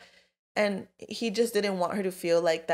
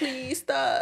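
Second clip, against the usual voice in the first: mock pleading, imploring, begging tone; 8 semitones higher than usual. Discussing a story with a friend, acting out a character begging: mock begging. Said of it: "he was just begging".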